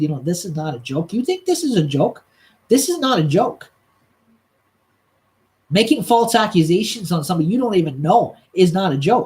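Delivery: play-acted firm, clear, stern, no-nonsense voice. Retelling what they told a man making false accusations, retelling in a clear, stern voice. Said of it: "in a very clear, stern voice".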